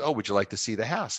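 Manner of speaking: plain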